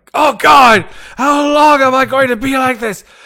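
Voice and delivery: frantic, shrill, very high-pitched, very loud, panicked scream. Voicing a summoned creature screaming in its mind: screaming in panic. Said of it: "it's just screaming like".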